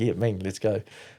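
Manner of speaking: ordinary delivery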